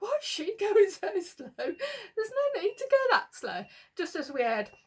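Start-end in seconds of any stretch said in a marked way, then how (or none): 0.0-3.6 mock griping, complaining voice. Retelling the driver complaining about a slow learner: imitating Liam moaning. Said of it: "Liam was moaning".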